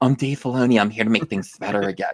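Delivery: ordinary, natural, real-life speaking voice. Showing what he actually sounds like, unlike the imagined voice: Dave Filoni impression. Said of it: "He sounds like".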